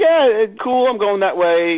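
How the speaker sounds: put-on very high, offhand, casual, nonchalant tone. Retelling how she answered the coffee invitation: imitating her nonchalant reply. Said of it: "she was kinda nonchalant about it".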